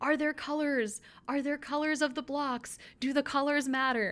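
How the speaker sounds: put-on, fed-up, exasperated mild yell. Retelling how Richard reacts to teams with red blocks: imitating Richard yelling. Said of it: "he's just yelling".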